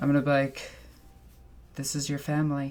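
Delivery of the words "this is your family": muttered quietly, quieter. Speaking in character to a cherub, under the breath. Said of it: "just under my breath".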